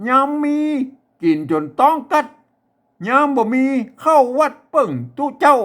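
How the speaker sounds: very high-pitched Chiang Mai Northern Thai accent. Reading aloud to show listeners how it is said, in a Chiang Mai accent. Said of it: "วันนี้จะอ่านแบบสำเนียงเชียงใหม่".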